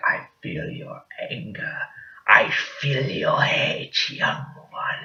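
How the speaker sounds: slow, breathy, creepy whisper. Retelling a film scene where Emperor Palpatine tempts Luke: creepy seductive Emperor Palpatine voice. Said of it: "this dude is just creepy, just seducing him".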